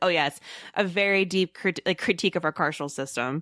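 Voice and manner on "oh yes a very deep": usual speaking voice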